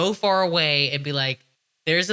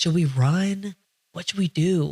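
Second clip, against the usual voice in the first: put-on whisper; 2 semitones higher than usual. Retelling hiding from police under a trailer: imitating own whisper. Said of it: "Like, whispering".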